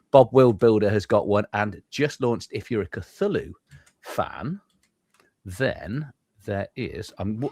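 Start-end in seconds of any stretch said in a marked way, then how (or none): 2.5-7.4 slow, drawn-out, distracted half-attention talking. Host talking slowly while trying to share the screen. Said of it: "you can tell I'm talking slowly".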